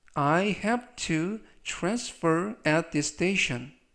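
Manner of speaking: very slow, careful, model English reading. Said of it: "천천히 세 번씩 읽어드리고요".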